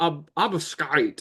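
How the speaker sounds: put-on cartoon duck voice. Saying a card name aloud: Donald Duck voice. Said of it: "I'm trying to say it like Donald".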